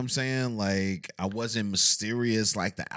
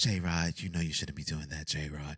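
deep, low, soft, sultry scolding tone; 6 semitones lower, 7 dB quieter than usual. Recalling how his late friend cussed him out, imitating Mahogany's deep sultry voice. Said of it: "She had this real deep yeah. and sultry voice".

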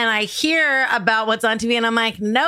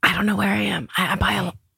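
put-on whisper; 2 semitones lower than usual. Imitating a hostage's nine one one call: imitating a whispered hostage call. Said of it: "Nine one one calls where you're being held hostage and have to whisper".

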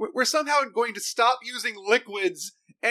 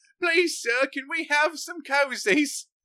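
begging, Victorian-era orphan voice; 4 semitones higher than usual. Joking that the internal organs beg like Dickensian orphans: Dickensian orphan voice. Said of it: "sounding like Dickensian orphans just going like".

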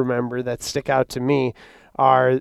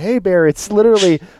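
high, pitched-up hollering yell; 6 semitones higher, 5 dB louder than usual. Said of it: "we both started yelling".

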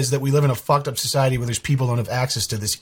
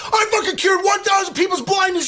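put-on rapid hype announcer style. Retelling a charity video to another speaker: imitating a fast-paced hype video. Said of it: "in this super fast paced".

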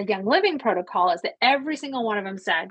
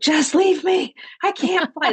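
begging plea, high, raised pleading; 7 semitones higher, 5 dB louder than usual. Recalling being very sick at the Miami airport, retelling own begging. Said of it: "I begged to be left in Dominican".

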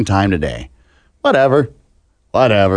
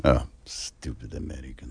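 hushed, put-on fake Russian accent; 13 semitones lower, 16 dB quieter than usual. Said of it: "That sounded more Russian".

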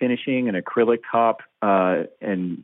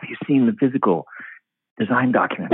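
secretive, conspiratorial stage whisper; 2 semitones higher than usual. Retelling how people asked in the hallway: imitating someone whispering. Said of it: "would whisper".

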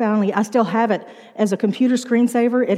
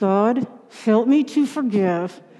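mock gritted-teeth delivery, much slower. Telling how forgiveness began, the speaker acts out a past prayer through gritted teeth. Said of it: "I started praying through gritted teeth".

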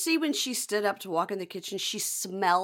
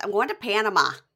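mock nasal Michigan voice with lilt; 4 dB louder than usual. Imitating a man who always says he's going to Panama: imitating a nasal Michigan voice. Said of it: "really, like, weird nasal voice".

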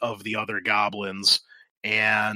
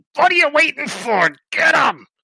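very high, loud, shrieking goblin yell; 6 dB louder than usual. Narrating a fight scene, voicing the goblin on the stone: shouting goblin. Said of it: "you see the one on the stone shouts".

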